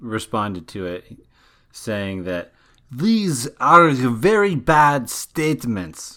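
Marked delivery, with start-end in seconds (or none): 2.9-6.2 bad Russian accent, loud, slow, drawn out. Quoting the Kremlin spokesman's reply, in a horrible accent as Dmitry Peskov. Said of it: "That's a horrible accent".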